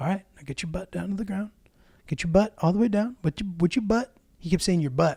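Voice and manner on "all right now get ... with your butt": quiet, hushed stage half-whisper under the breath. Retelling a trainer coaching someone in a coffee shop, imitating his half-whisper. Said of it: "he was whispering because he didn't want".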